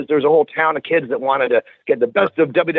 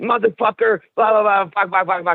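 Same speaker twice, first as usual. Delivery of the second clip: angry, high-pitched, hot-tempered cursing rant; 5 semitones higher than usual. Retelling a friend's reaction on the phone: imitating someone's angry rant. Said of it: "And he's all hot".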